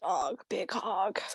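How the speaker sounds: low, hushed, raspy emo smoker voice. Asked by another speaker to do the emo Damien voice: emo Damien voice, like a smoker. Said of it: "I sound like a smoker".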